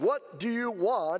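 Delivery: deliberately irritating, very annoying high voice. The pharmacist answers a woman pounding a quarter on the counter, in a very annoying voice. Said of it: "In a very annoying voice".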